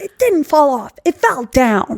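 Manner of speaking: high, furious, screaming voice. Repeating the mom's line from a show, retelling a scream. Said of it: "She's screaming it".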